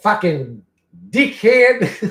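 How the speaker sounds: loud, high-pitched Australian accent. Speaker tries out how Australians say an insult, in an Australian accent. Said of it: "The way Australians say dickhead is so awesome".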